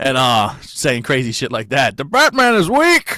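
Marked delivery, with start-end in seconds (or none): 2.0-3.2 very loud, very high-pitched villain voice. Joking about a breathing mask, walking around talking like Bane. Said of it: "fucking Bane from the Dark Knight movies".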